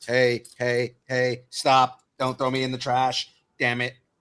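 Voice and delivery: distorted, malfunctioning robot voice. Speaker retelling a scene, doing Soundwave's messed-up voice. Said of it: "Soundwave with his messed up voice".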